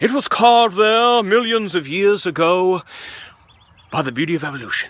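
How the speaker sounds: put-on, learned-sounding English accent. Speaker notes an English accent sounds smarter, then uses one: English accent. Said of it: "in a English accent".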